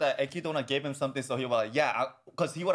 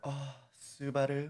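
put-on sexy witch voice, quieter; 6 dB quieter than usual. Acting out how a character was expected to sound: sexy Echidna voice. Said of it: "her voice is gonna be like".

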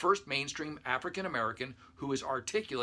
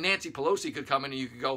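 ordinary talk

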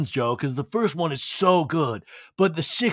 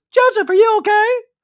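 shrill, very high-pitched and very loud voice; 10 dB louder than usual. Retelling an Olive Garden dinner, doing Schwartz's high-pitched voice. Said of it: "Schwartz uses a high-pitched voice".

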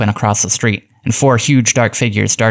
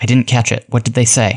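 usual speaking voice

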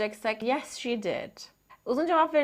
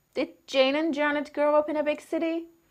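pitch climbing upward on the word city; 4 semitones higher than usual. English lesson on yes-no questions: rising intonation on city. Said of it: "Rising intonation".

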